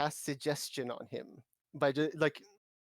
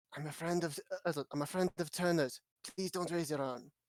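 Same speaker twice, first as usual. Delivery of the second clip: hushed whisper, higher pitch; 3 semitones higher than usual. Speaking in character from behind a tree to someone nearby: whispering. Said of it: "whisper around".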